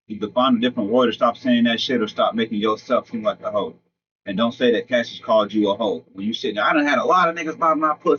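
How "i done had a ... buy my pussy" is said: put-on high, screaming, boastful voice. Criticizing a woman's live internet post, repeat her words imitating someone screaming. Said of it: "Stop screaming that shit on the internet".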